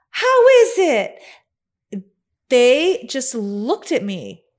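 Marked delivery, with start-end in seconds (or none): 0.1-1.1 put-on very high, loud, cheery Southern accent. Retelling what the speaker said to the people at the next table, in happiest Southern Paula Deen voice. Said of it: "In our happiest Southern Paula Deen voice".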